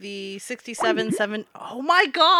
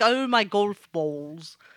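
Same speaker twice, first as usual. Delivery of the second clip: bad, unconvincing British accent. Mocking British people in a put-on voice: bad UK accent. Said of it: "the worst U K accent".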